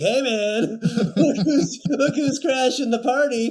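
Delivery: loud, put-on drunk Irish man accent. Retelling a movie scene where a newcomer rides in: imitating a drunk Irish guy. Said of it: "drunk Irish dude".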